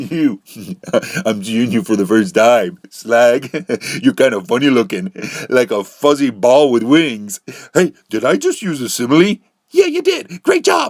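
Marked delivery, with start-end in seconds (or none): 0.0-7.4 giggly speech broken by laughter. Teasing a friend who asks what is so funny, laughing while talking. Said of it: "What are you laughing at?".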